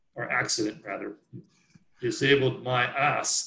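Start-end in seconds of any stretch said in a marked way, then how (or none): 2.0-3.5 put-on very thick, heavy German accent. Retelling what a German racer said while being passed: thick Arnold Schwarzenegger-like accent. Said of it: "says in a very thick Arnold Schwarzenegger-like accident".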